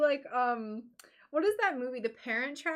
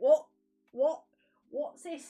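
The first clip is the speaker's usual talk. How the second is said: loud, terrible, put-on British accent; 5 dB louder than usual. Showing the bad British accent used to annoy a friend: terrible British accent. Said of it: "a terrible British accent".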